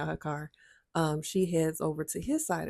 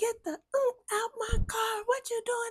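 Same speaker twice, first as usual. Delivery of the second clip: put-on furious shout, very high pitched; 3 dB quieter than usual. Telling how a woman came to the passenger door, retelling her yell. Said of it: "She's yelling".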